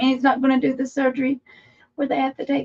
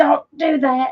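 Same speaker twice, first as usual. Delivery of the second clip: ordinary delivery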